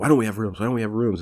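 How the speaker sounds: fast, rushed, rattled-off hollered yelling. Describing a scene, imitating a manager yelling at the hotel staff. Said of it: "he's like yelling at the guys".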